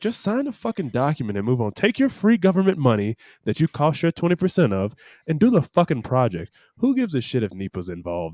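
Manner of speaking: normal talking voice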